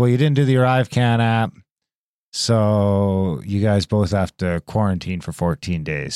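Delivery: plain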